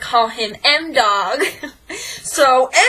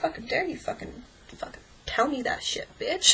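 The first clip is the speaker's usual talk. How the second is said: put-on whisper, disgusted and full of contempt; 3 semitones higher, 11 dB quieter than usual. Retelling what a boy said back after being threatened: imitating a disgusted boy.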